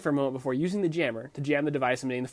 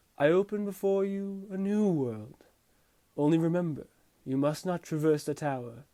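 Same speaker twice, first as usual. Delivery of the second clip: otherworldly, mystical god voice; 4 semitones higher than usual. Retelling how a voice addresses him after the first trial, mystical god voice. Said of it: "Mystical God voice says".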